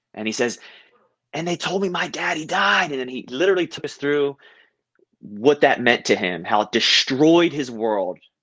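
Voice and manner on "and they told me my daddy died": high-pitched, all-out, top-of-the-lungs bellowing yell. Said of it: "He literally is yelling at the top of his lungs".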